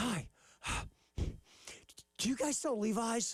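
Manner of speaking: mock winded, breathless, slow, frazzled, panicked tone. Retelling a customer who ran in panicked: imitating someone out of breath and frantic. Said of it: "so she was out of breath".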